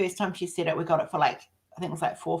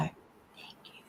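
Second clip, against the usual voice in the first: put-on small child's very quiet, barely audible whisper. A mother acts out her little daughter saying thank you, imitating a child speaking quietly. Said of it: "Really quietly".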